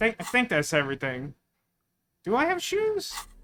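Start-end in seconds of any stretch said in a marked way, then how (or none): 2.2-3.1 voice going really high. Checking whether they have everything, the speaker asks about shoes, voice going really high. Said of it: "My voice went really high".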